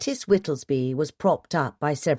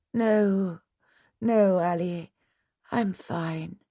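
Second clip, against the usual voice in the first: weary, tired voice; 3 semitones higher, 4 dB quieter than usual. Lettice answers her husband Ally after he urges her; weary. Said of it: "she said wearily".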